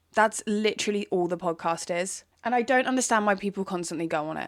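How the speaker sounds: usual speaking voice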